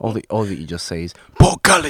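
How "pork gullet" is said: loud, high-pitched shriek. Trying another line of the same impression: bad Saw Gerrera impression. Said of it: "I can't do a good Saw Gerrera impression".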